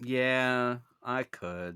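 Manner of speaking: deflated, disappointed, drawn-out "yeah". Told he could talk about rope a long while, he admits it, disappointed. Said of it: "Why do you sound so disappointed?".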